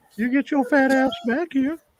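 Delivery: very high, full put-on cartoon voice. Doing an impersonation after the show Family Guy is mentioned: Family Guy impersonation. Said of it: "It's impersonations".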